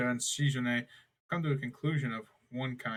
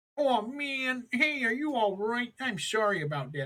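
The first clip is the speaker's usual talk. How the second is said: very high, dopey, silly, stupid-sounding voice; 11 semitones higher than usual. Narrating a story, giving a minor girl character a real stupid voice. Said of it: "I'll just give her a real stupid voice".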